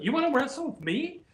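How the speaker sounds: put-on, pitched way up, dripping with sarcasm. Retelling a wrestler's challenge to wrestle: imitating own sarcastic question. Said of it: "saying it sarcastically".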